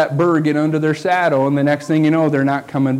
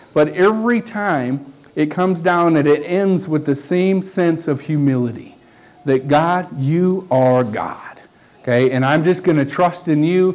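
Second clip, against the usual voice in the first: ordinary delivery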